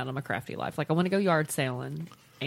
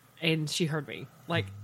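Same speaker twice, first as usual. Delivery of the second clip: usual speaking voice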